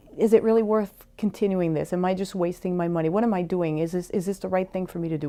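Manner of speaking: ordinary talk, nothing marked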